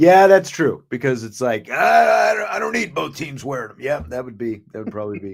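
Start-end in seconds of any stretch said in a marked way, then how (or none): 1.7-3.8 raised, roughened voice. Joking about a friend's opinion on alternate uniforms: John impersonation. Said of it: "that's my John impersonation".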